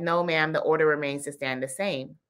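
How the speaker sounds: ordinary delivery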